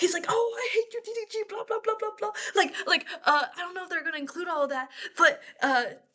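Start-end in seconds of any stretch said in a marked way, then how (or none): 0.3-2.3 mock, high, angry, heated screaming rant. Retelling an argument where two people screamed at each other: imitating someone screaming. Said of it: "they were screaming at each other".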